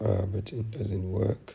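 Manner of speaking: normal talking voice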